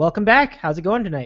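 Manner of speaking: smooth, clear, confident, sexy voice. Speaker greets everyone back on the program, smooth, confident, sexy voice. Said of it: "smooth, clear, confident, sexy".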